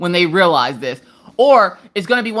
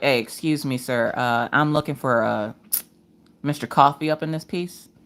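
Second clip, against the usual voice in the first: put-on professional manner, lower and quieter; 5 semitones lower, 6 dB quieter than usual. Acting out walking in somewhere dressed up: put-on professional manner. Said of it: "walk in there all professional".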